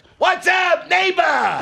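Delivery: very high, loud, flamboyant, animated shout. Retelling a new neighbor's greeting at the door: imitating Frank, loud and flamboyant. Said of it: "And so loud and so flamboyant".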